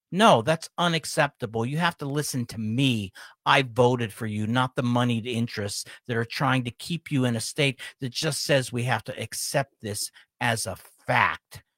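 ordinary talk

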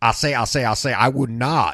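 Southern cartoon character voice. Speaker does one of his southern senators, with a Foghorn Leghorn effect. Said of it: "kind of have a foghorn leghorn effect".

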